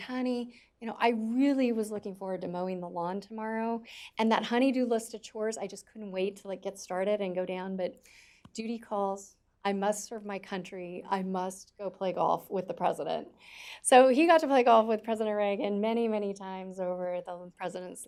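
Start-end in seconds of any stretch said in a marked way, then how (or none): none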